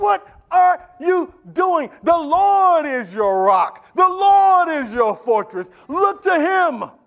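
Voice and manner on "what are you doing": screaming, high-pitched. Speaking to the church, quoting Proverbs as wisdom calling out, imitating a scream. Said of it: "wisdom screams out".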